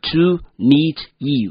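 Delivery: slow, careful delivery of "to meet you".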